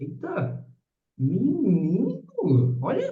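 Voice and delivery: very high, soft, gasping surprise.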